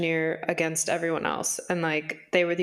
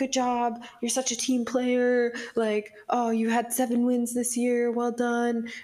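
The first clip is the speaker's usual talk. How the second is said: high, hollow, insincere, fake-sounding praise; 7 semitones higher than usual. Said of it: "it seems so fake".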